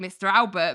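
plain

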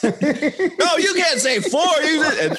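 very high, very slow, drawn-out acted yelling. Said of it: "[name] yelling at [name]".

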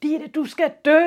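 high, very loud, raw roaring bellow. Telling about a troubled pupil, the speaker reenacts him roaring at his teacher. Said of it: "råber han bare til hende".

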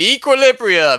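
mock booming voice. Describing a game's first rank-up, imitating a booming voice in your head. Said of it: "a voice booms in your head going".

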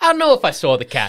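put-on New Jersey guy accent. Speaker plays someone at the docks in a crime-show bit; new jersey accent. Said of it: "why do you sound like a guy from New Jersey".

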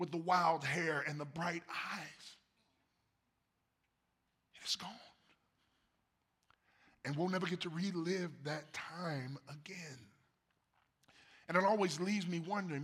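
choking up, teary-eyed. Reflecting on time that is gone, getting teary-eyed. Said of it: "I'm getting a little teary-eyed".

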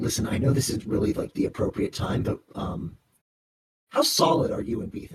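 soft, breathy, private whisper. Speaker voicing Dan, who leans forward to the listener: Dan whispering. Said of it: "lean forward and whisper to you".

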